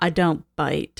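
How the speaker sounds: mock dry, expressionless, dead level, flat deadpan. Discussing a scene, quoting how he delivers his line: imitating his deadpan delivery. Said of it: "How he's just like so deadpan".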